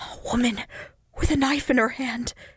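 gasping whisper. Answering the landlord's question, a man gasps it out in a whisper. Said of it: "he gasped out".

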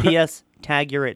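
plain

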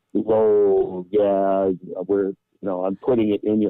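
normal talking voice

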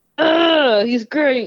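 grudging praise forced through clenched teeth. Watching a guy on the show who irritates the speaker, said through gritted teeth. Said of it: "You have to say it through gritted teeth".

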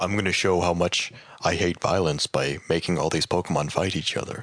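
put-on creature character voice. Chatting about Pokemon, speaker answers his own prompt with a Mewtwo impression. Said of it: "Give me a Mewtwo impression".

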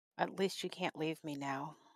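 barely audible, deep, soft, very hushed half-whisper. Voicing a character half-whispering to his sleeping best friend, half-whispering. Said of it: "he's going to whisper at him".

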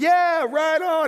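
shrill, very high, loud street-preacher bullhorn holler. Retelling a man's reply through a bullhorn downtown, imitating his scream. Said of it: "He's screaming in the bullhorn".

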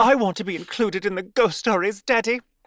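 put-on very high, theatrical, drama-queen little-girl voice. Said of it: "I'm making her sound like one of the children from Mary Poppins".

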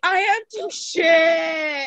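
play-acted, high, very slow, drawn-out, desperate crying. Retelling being stuck in the snow with students watching, retelling crying. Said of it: "I'm just like crying".

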